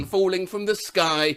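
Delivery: ordinary talk, nothing marked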